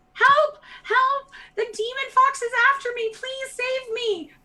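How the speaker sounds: put-on very loud, very high, shrill little-girl shriek. Narrator voices a little girl rushing toward the players: screaming little girl. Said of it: "a little girl rushes out ... screaming".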